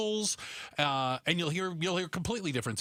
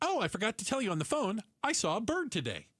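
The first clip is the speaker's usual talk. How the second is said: high-pitched, eager, enthusiastic, excited delivery; 6 semitones higher than usual. Retelling how a wife tells her husband some news: imitating someone saying it enthusiastically. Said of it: "She's very enthusiastic".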